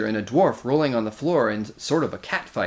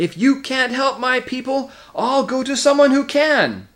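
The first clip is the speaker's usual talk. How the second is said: voice climbing to a very high scream; 12 semitones higher, 5 dB louder than usual. Arguing with a badger, the speaker's voice rises to a scream. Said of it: "whose voice now rose to a scream".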